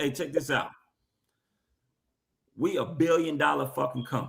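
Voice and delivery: stern, scolding, authoritative tone. Imitating Roger Goodell telling officials off: imitating Roger Goodell telling them off. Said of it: "he telling them just like this".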